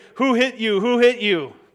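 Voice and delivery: sarcastic, schoolyard-style mocking jeer. Explaining a text about Jesus, the speaker acts out his mockers' mock jeering. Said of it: "they're jeering".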